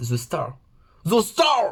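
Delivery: slow, drawn-out English accent. Naming the last card in English, with an English accent. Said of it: "Mon accent English, English accent".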